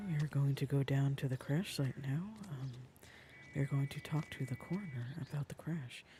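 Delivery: asmr whisper. Describing the next step in the game in ASMR mode: whispering. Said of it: "I'll start whispering".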